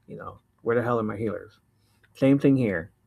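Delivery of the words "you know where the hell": plain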